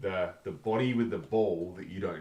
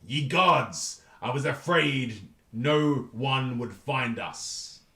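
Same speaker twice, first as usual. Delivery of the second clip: loud, very slow, drawn-out pirate voice; 6 semitones higher, 6 dB louder than usual. Narrating a scene, voicing an orb that calls out, in a pirate voice. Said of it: "So the orb sounds like a pirate".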